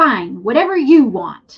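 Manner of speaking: very loud, drawn-out attitude, acted out. Retelling how he answered when you suggested getting out there earlier, imitating someone with attitude. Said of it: "he said it with attitude".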